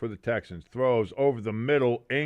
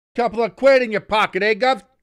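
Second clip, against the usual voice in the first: terrible English accent, very high, shrill and loud; 11 semitones higher, 9 dB louder than usual. Speaker pitching bets to fans of an eliminated team, in a terrible English accent. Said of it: "That was a terrible English accent".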